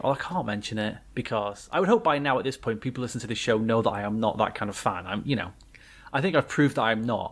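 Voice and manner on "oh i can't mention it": normal talking voice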